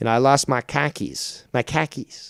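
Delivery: "car keys" sounding like "khakis". Speaker switches voices while joking about pronunciation: boston accent. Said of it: "I'm going into the Boston accent here".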